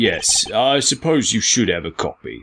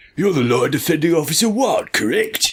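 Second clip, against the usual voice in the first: put-on Cockney accent, pitched up; 8 semitones higher than usual. Reading a scene aloud, asking the lawyer a question in a Cockney Batman voice. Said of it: "A Cockney Batman".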